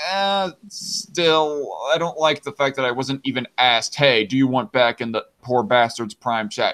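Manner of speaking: plain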